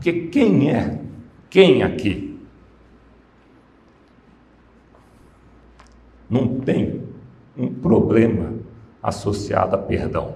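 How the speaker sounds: emotional, choked up, holding back tears. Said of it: "eu já me emociono".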